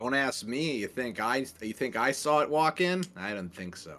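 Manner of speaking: put-on New York accent. Answering a question in character during a game scene: New York accent. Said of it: "why did you develop a New York accent?".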